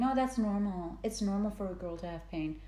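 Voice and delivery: ordinary talk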